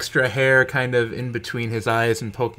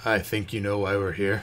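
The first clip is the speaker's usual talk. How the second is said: very low, soft growly voice from deep down; 3 semitones lower, 6 dB quieter than usual. The tallest of the individuals answers the greeting at closing time: very low, growly voice. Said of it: "A very low, growly voice comes from the uh, tallest of the individuals".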